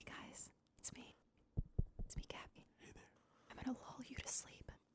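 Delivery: soft, hushed, lulling, soothing ASMR whisper. Asked for a sample for an ASMR channel, in an ASMR sample voice. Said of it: "Give us a sample".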